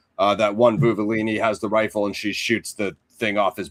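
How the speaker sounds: normal talking voice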